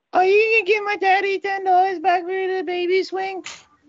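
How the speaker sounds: put-on creepy child voice. A kid on the phone repeats his question to a woman, creepy kid voice. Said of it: "She got scared talking to the creepy kid".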